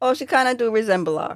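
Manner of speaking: plain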